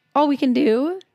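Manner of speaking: voice cracking mid-phrase. Host winding down a rant before introducing this week's podcast, voice cracking. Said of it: "nice voice crack".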